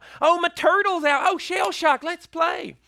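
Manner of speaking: put-on heavy, childlike, shrill, very high southern drawl. Retelling what he said to his turtle as a young child, in a thick southern drawl. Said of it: "thick southern drawl".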